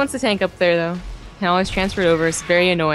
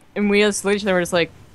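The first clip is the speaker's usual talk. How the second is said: ordinary delivery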